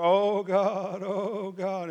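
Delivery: put-on mournful wailing, very slow and drawn-out. Speaker retells what the teachers said while pleading with God, imitating someone moaning. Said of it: "there's weeping and mourning and moaning".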